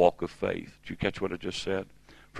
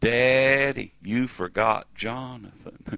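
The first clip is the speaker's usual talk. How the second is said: put-on plaintive, drawling little girl's voice, southern accent; 4 semitones higher than usual. A father retells his daughter calling from the back of the van: little girl's southern drawl. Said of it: "She actually talks like this".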